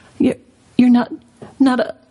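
trembling voice. Susan, unable to bring herself to finish, asks Aslan in a shaky voice. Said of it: "asked Susan in a shaky voice".

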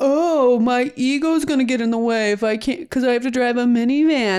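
dismissive, mocking tone. Retelling how a man answered Kelly, imitating a mocking voice. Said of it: "he had that like a mocking voice".

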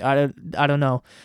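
usual speaking voice

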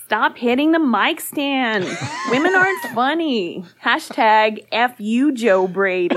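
put-on American accent. Reading out a listener's message on the podcast, in an american accent. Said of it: "That American accent was pretty good".

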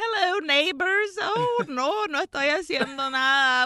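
put-on chill, unbothered tone. Retelling an old man answering angry neighbors over the roof, imitating a chill reply. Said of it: "just real chill about it".

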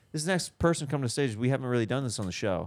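ordinary delivery

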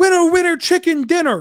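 mock very high, lit-up, excited sports-caller voice. Retelling a play-by-play call of a walk-off home run: imitating John Radigan's excited call. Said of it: "he just lights it up".

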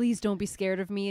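mock-pleading, begging tone. Speaker acts out a male character's line to her: imitating begging. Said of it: "he's like begging her".

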